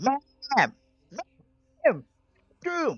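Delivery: put-on cartoon child voice, yelling. Imitating Cartman playing an online game, yelling: Cartman yelling. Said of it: "Cartman and just yelling".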